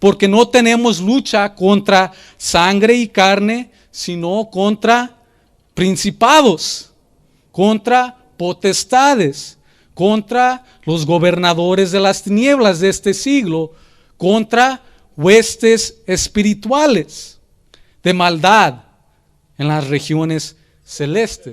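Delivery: slow, deliberate reading-aloud delivery.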